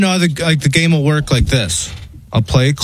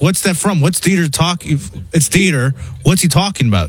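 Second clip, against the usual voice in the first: ordinary delivery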